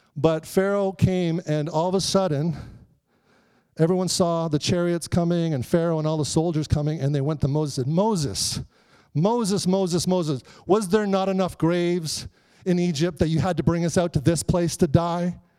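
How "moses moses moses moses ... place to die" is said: plain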